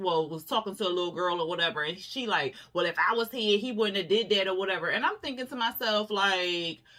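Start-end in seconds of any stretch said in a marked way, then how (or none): none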